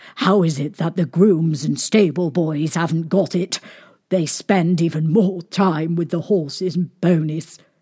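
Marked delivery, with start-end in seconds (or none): none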